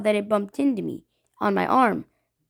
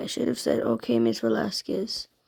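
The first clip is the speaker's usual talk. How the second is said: plain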